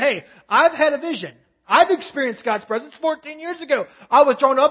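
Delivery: sarcastic boastful tone. Paraphrasing Paul telling them of his vision: sarcastic imitation of Paul. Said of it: "just a hint of sarcasm right here".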